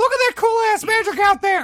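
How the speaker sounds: shouting. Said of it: "I'm yelling that shit".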